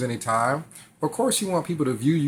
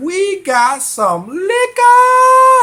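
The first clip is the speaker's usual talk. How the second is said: put-on extremely high, booming, dragged-out, shrill, silly drunk voice; 12 dB louder than usual. Retelling a drunk man offering him liquor: imitating very high-pitched voice. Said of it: "his voice was about as high pitched as as you could imagine".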